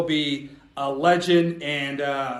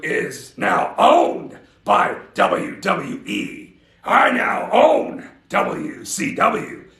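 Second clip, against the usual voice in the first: very slow, growly delivery; 2 semitones higher, 3 dB louder than usual. Doing an impression while talking about owning WCW: growly Vince McMahon voice. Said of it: "That's my Vince McMahon, kinda growly".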